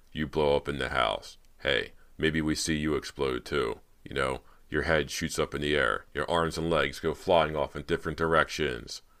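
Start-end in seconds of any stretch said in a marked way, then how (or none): none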